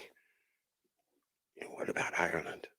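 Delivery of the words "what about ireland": soft whisper under the breath. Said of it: "kind of under their breath say".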